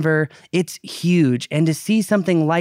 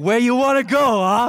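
put-on, pitched-up New York taxi-driver accent; 7 semitones higher than usual. Responding to a co-speaker calling himself an air taxi: New York accent. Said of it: "pick up a New York accent and be like".

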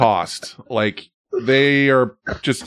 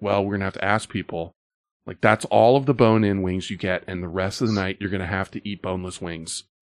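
put-on hush, serious, much lower, quieter; 4 semitones lower, 6 dB quieter than usual. Recounting a lady who talked about rationing wings: imitating a hushed serious tone. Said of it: "she's very serious about it and in a very hushed tone".

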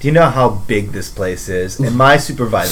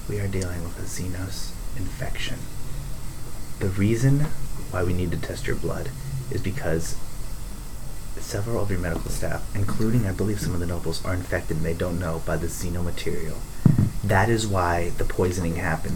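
lowered, hushed, confidential low voice; 2 semitones lower, 8 dB quieter than usual. In a role-play, a character speaks to a frightened woman; lowered voice. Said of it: "And I lower my voice".

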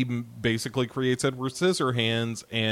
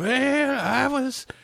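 high, put-on old lady voice. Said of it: "her old woman voice".

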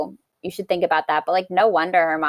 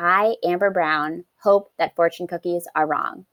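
normal talking voice

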